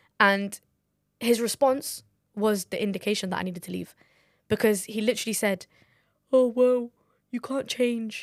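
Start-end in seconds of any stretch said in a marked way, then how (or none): 6.3-8.3 put-on Brummie accent, slow and mocking. Retelling a man's reply to being told what the speaker disliked, in a mock Birmingham accent. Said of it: "I don't even mean to mock your voice".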